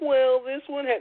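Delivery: high, slow, whiny complaining tone.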